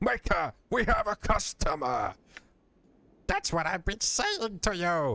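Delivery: very high, swooping, half-slipping golem-ish voice. Narrating a scene, the speaker voices a man announcing a customer, in a near golem voice. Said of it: "I almost went to like a golem voice there".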